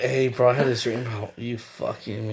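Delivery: play-acted sleepy, groggy, just-woken delivery. Imitating Hans calling a friend: Hans barely waking up voice. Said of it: "his voice of, like, him barely waking up".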